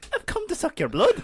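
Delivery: pitched high and loud in an Irish accent. Joking with friends about Dracula's family being from Dublin, Dracula with Irish accent. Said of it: "Dracula with his Irish accent".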